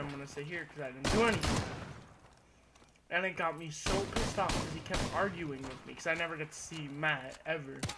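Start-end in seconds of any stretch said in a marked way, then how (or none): none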